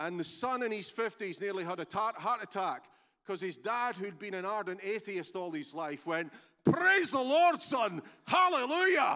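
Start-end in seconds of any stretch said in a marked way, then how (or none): 6.6-9.2 very loud, big booming voice, pitched high. Retelling how an atheist father suddenly praised the lord, retelling a big booming voice. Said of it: "in this big booming voice".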